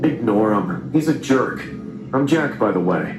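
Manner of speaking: usual speaking voice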